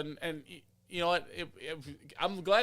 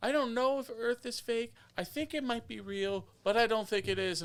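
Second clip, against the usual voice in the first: put-on sweet, small, cute childlike voice, pitched up; 7 semitones higher than usual. Quoting what he said, imitating him: cute little voice. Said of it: "he said it in his cute little voice".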